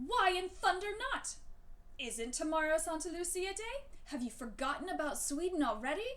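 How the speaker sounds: grumbling, indignant, gruff, cross yelling. Hearing Hannah won't wear her dress this year, the Tomten shouts back: cross, gruff shouting. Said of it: ""Impossible!" shouted the Tomten. / the little man said crossly. / "I suppose it's too good for an old fellow like me." / The Tomten's voice was as gruff as usual, / grumbled the Tomten. / "I understa".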